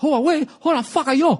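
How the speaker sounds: exaggerated fake Chinese accent, pitched high. Redoing a company's commercial line after giving up the first try, bad chinese accent. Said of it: "Maybe if I did it in a bad Chinese accent".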